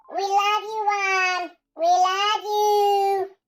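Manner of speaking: put-on very high, very loud baby-talk voice. Thanking someone by name, with love, in a baby voice. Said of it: "That's my baby voice".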